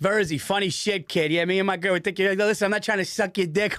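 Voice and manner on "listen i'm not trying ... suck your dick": ordinary talk, nothing marked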